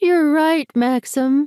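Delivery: very high-pitched, squeaky little voice. Reading a scene where a character mocks his partner: squeaky, high-pitched voice. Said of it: "adds in a squeaky, high-pitched voice".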